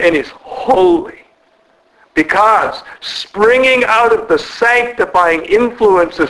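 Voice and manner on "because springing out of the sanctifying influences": ordinary delivery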